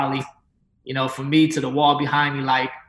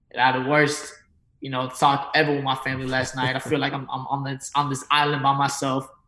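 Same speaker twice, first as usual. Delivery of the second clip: plain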